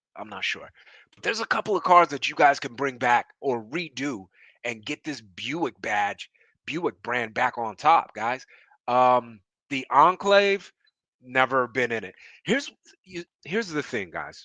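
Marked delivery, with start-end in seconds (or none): 12.4-14.4 stuttering, pitched-up stammer with false start. Talking to viewers about cars, stuttering. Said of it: "I'm stuttering right now".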